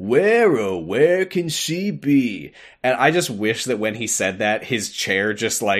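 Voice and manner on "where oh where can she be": put-on, very slow, gloating, smug, pitched-up drawl. Retelling what Zigbar said after laughing smugly; smug Zigbar impression. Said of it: "smugly laughs, and he's like".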